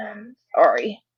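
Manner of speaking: tearful, choked-up voice.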